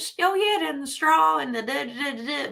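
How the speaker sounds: forced Southern accent. Showing how they could fake an accent: forced Southern accent. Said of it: "I can force a Southern accent".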